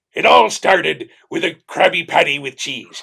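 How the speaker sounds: very loud, rough, gruff, swooping cartoon sea-captain bellow. Asked on the spot for a Mr. Krabs impression, delivering it. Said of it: "Can I hear mister Krabs' impression?".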